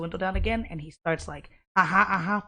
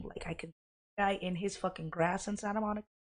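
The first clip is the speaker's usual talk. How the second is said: normal talking voice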